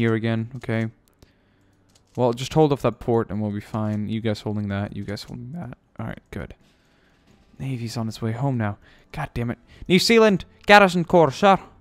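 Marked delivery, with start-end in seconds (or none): 9.9-11.6 put-on Scottish accent, loud and high. Reading out a unit name during a game, in a put-on Scottish accent. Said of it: "Why do we speak Scottish?".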